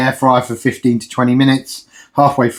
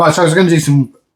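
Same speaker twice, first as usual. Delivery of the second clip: rushed, rattled-off, fast chatter; 4 semitones higher than usual. Talking viewers through the day's meals while cooking, speaking very quickly. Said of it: "Why am I speaking so quickly?".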